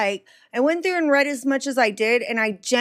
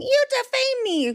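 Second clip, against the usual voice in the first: put-on very high, shrill screeching scream; 13 semitones higher than usual. Mocking people online who scream about defamation: imitating people screaming.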